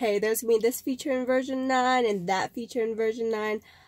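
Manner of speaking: ordinary talk, nothing marked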